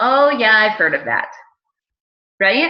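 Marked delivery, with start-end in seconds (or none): 0.0-1.3 bored, unimpressed, dismissive tone. Retelling how people answer on hearing of the company: imitating a dismissive tone. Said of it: "they kinda get that tone".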